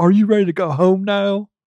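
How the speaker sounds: put-on high, lilting Southern accent. Imagining the movie's ending as Keanu speaks: Keanu impression sounding like Forrest Gump. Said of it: "That was a little bit Forrest Gump".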